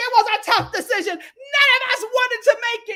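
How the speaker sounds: put-on high-pitched, angry, cussing rant. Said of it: "cussing the guys out the most".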